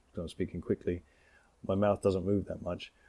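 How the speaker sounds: plain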